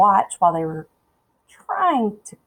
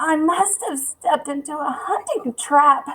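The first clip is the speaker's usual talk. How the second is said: high, choked, strangled speech; 9 semitones higher than usual. Narrator reads a boy's line as he hangs caught in a rope trap, strangled voice. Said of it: "he said in a strangled voice".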